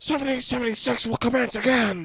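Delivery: put-on raspy ranting voice. Doing a quick impression for the others: Alex Jones impression. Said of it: "I had to do the Alex Jones".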